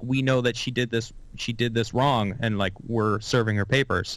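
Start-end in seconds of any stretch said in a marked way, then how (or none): none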